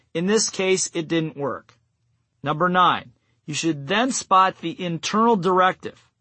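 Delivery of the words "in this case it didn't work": ordinary talk, nothing marked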